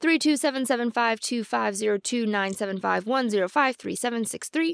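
rapid-fire read-through, rattled off really fast. Showing a hash function, the speaker reads out the long result really fast. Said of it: "I'm going to read it really fast".

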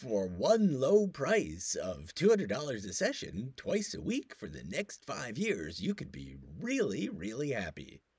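loud, sing-song put-on salesperson voice. Pitching therapy sessions at a low price in a salesperson voice. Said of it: "That was a good, bad salesperson voice".

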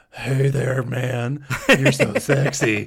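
put-on whispery voice. Imitating Elaine disguising her voice on the tape: Elaine's whispery voice. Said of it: "when she does her little, like, whispery voice ... she's like".

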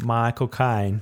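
put-on London accent. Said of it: "it sounds like Michael Caine".

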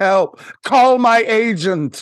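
mock cry, high, loud and slow.

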